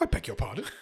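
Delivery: affronted, offended, indignant delivery. Retelling the nurse's reply to being sworn at: imitating an offended reply. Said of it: "She's really offended".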